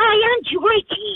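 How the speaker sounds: tiny, very high little pet voice. Talking about pets with voices, a speaker does Georgie's voice. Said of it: "Georgie actually talks like this".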